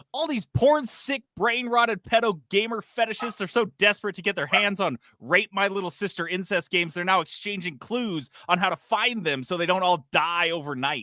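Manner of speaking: spiteful, venom-laced, very high-pitched delivery. Rereading a tweet aloud on another speaker's request: reading with put-on vitriol. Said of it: "please say it with the vitriol that it deserves".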